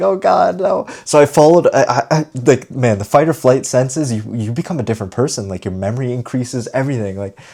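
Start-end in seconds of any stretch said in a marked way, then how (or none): 0.0-0.9 frightened, scared, high burst of dread. Retelling being lost and scared as a kid: retelling own fear. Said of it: "And so I was really scared".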